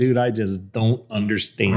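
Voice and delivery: ordinary talk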